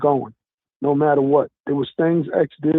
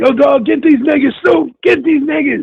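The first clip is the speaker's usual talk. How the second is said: loud, very high shout; 10 semitones higher, 6 dB louder than usual. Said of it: "I could do his voice".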